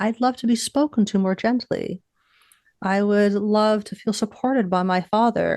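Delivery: ordinary delivery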